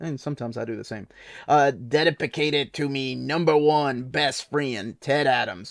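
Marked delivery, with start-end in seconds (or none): 1.7-5.7 slow, mumbling read with a little country twang. Reading a book dedication aloud as Popeye would: Popeye voice. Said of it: "I'm going to try to read this as Popeye would".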